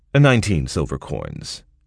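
ordinary delivery, nothing marked

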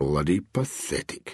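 mumbled under breath. Reading a man sitting down on a sun lounger: muttered. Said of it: "Bob muttered".

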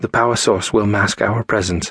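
ordinary delivery

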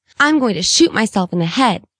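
plain

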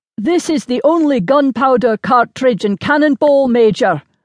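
put-on grunted Highland Scots accent. Narrator reads a sergeant's line to the Major while loading a cannon, grunting in Highland Scots accent. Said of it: "the sergeant grunted in his Highland Scots accent".

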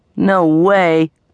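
grumbling, annoyed. A boy taunted as chicken by a girl answers her, grumbling, annoyed. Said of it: "he grumbled".

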